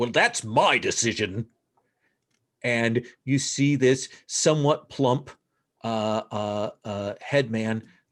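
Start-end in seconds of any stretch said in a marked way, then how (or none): 0.0-1.5 grumbly, grumbling tone of voice. A narrator voices the village headman cutting in, in a grumbling voice. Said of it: "this grumbling voice goes".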